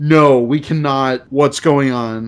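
ordinary talk

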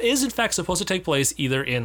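ordinary talk

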